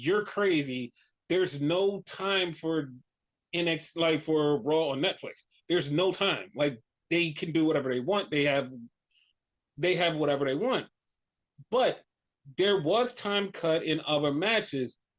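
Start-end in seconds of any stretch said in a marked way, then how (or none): none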